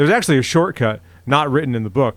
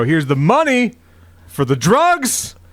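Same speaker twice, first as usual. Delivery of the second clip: drawn-out, showy, pitched-up sing-song delivery; 5 semitones higher than usual. Speaker retells handing over a dollar bill in front of teachers: retelling saying it loudly. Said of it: "As loud as I could".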